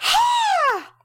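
very high, loud, long, drawn-out gloating shout. Retelling getting number one over Barry, the speaker acts out a really loud ha. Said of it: "Really loud".

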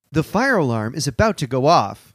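synthetic, robotic computer-system voice. Recounting waking in bed, the speaker mimics what a computer voice announced: imitated computer voice. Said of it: "a computer computer voice come out and go".

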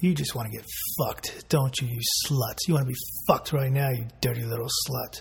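low, hushed, close whisper. Demonstrating lines to say into someone's ear, whispering in someone's ear. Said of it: "you're whispering in their ear".

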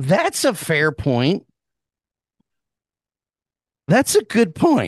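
voice cracking and breaking mid-phrase. Conceding another speaker's point, with voice cracking. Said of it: "As my voice cracks like a 13-year-old".

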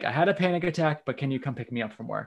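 ordinary delivery

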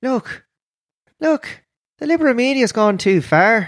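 very high-pitched, elfin leprechaun voice. Improvising a line the leprechaun might say, leprechaun voice. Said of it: "maybe the leprechaun says?".

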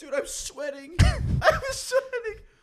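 very high, slow speech broken by laughter. Reacting to another speaker's story, laughing while talking. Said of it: "I'm sorry about my laughing".

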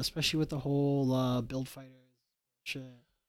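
soft, hushed aside.

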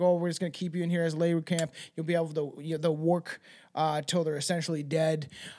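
normal talking voice

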